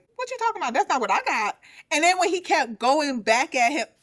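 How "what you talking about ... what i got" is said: mock baffled, confused, pitched-up tone. Acting out an older man's reaction to a claim: imitating a confused man. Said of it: "Grandpa was just very confused".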